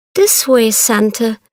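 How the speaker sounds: ordinary delivery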